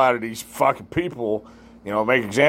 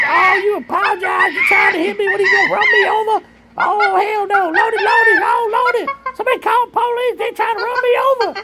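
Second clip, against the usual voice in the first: shrill, very high put-on screaming; 5 dB louder than usual. Retelling what a woman screamed while beating on a car window: imitating someone screaming. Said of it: "screaming at him like".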